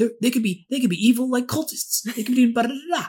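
high, yippy, yappy tiny-dog voice. Comparing a movie neighbor to a cartoon, imitating a yappy little dog. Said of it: "really yappy and just going".

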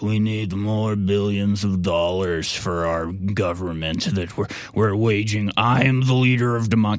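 slow, halting, dragged-out speech. Imitating a world leader who is asking for more money: imitating Zelensky's voice. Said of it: "he literally sounds like this".

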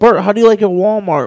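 ordinary talk, nothing marked

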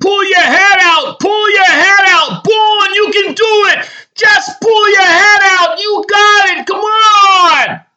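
shrill, very high, loud screaming. Reading a wrestling story, a coach urges his wrestler: screaming encouragement. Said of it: "Vale is screaming".

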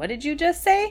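high, baffled tone with wide pitch swings.

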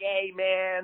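put-on breezy New York Italian accent. Retelling a first phone call with Paul Veely: imitating his New York accent. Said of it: "with a New York accent up in Rochester".

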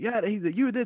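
put-on, very high, shrill hollering yell. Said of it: "my son was yelling".

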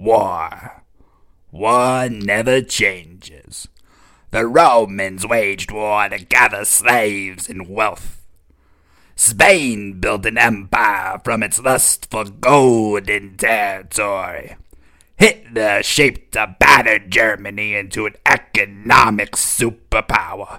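put-on, evil, sinister villain voice. Reading a passage for Tom in the evil voice he chose. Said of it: "the evil ember voice".

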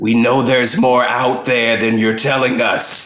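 very loud stage whisper. Voicing a character who confronts someone in the room: loud whisper. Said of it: "I whisper very loudly".

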